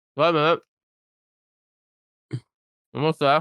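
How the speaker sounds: chewing while talking. Finishing a biscuit before explaining a point: chewing while talking. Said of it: "Let me just finish my biscuit".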